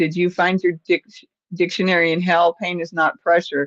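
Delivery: ordinary talk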